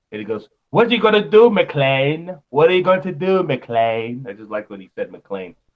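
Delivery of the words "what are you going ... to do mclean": put-on heightened English accent. Quoting the film's first villain as he addresses McLean, in the Die Hard villain's English accent. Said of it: "he had that English accent".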